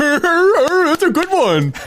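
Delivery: very slow, high, stretched-out drawling voice. Retelling how the other speaker reacted on a show: imitating the other speaker. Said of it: "that was a great impression".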